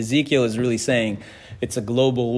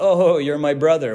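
put-on Farsi accent, higher and louder; 5 semitones higher, 5 dB louder than usual. Retelling how a man greeted him, quoting him in a Farsi accent. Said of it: "with like a Farsi accent".

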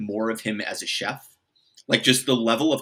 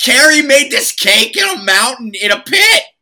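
put-on furious scream, much higher, louder, slower; 14 semitones higher, 13 dB louder than usual. Turning an angry rant about Tony Stark onto Carrie's cake, the speaker is imitating a furious scream. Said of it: "he just starts screaming".

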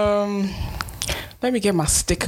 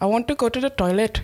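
fake put-on Indian accent, pitched up; 5 semitones higher than usual. Talking to the other speaker, doing a put-on indian accent.

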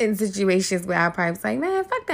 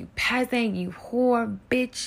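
restrained, ranting yell, mildly insulting tone; 4 semitones higher, 4 dB quieter than usual. Retelling a guest screaming while being made to leave: imitating someone screaming. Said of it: "he starts screaming at the top of his lungs".

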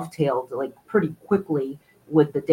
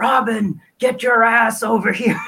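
slow, pitched-up bellowing yell; 7 semitones higher, 3 dB louder than usual. An actor stands up and calls to someone across the room, yelling in the Batman voice. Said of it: "yells across the room in the Batman voice".

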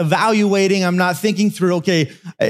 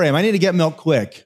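ordinary delivery

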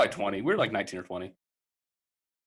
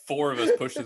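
usual speaking voice

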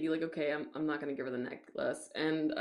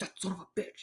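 play-acted, seething, breathy angry whisper; 7 dB quieter than usual. Retelling a movie scene where Nick gets mad: imitating angry Nick. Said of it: "Nick gets all mad".

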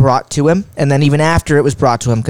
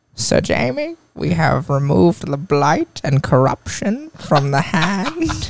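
put-on creepy court maester voice, quieter; 3 semitones higher, 4 dB quieter than usual. Showing another speaker who asked to hear it: Qyburn voice. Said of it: "I have a pretty good Qyburn".

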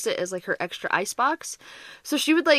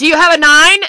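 put-on very loud, high, overexcited child-like shouting; 7 semitones higher, 16 dB louder than usual. Retelling kids playing Go Fish: imitating kids yelling. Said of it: ""Why are you yelling?"".

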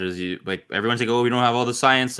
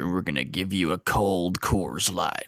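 put-on gruff voice, quieter; 2 semitones lower, 5 dB quieter than usual. Joking about gruff smoker voices: Sam Elliott voice. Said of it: "Sam Elliott here".

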